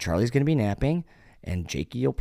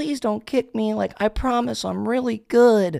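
put-on very high, raised ten-year-old kid's voice; 12 semitones higher, 6 dB louder than usual. Retelling a guy talking to older people in a chat, imitating a little kid voice. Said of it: "he sounds like a 10-year-old kid".

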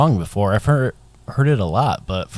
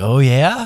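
high, loud, eager excited voice. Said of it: "I could hear the excitement in your voice".

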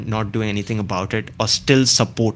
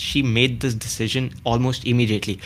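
normal talking voice

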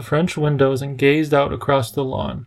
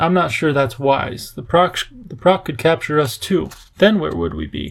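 ordinary delivery

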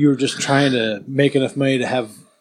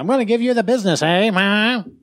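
put-on 1920s old-time movie voice, much higher; 8 semitones higher than usual. Joking with friends about giving someone the business, imitating old 1920s movie talk. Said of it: "You know how they".

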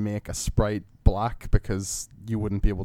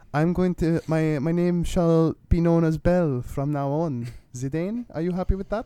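French accent with a higher-pitched voice; 8 semitones higher than usual. Recalling streaming a game and doing its voices, the speaker does Belle's French accent. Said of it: "I was doing a French accent for her".

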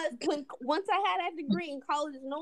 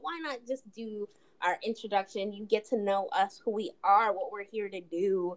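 ordinary talk, nothing marked

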